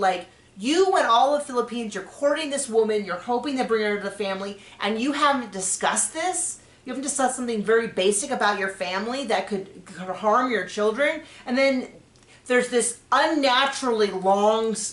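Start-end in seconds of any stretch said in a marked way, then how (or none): none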